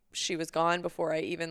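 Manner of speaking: ordinary talk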